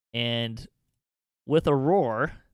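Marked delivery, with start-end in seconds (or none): none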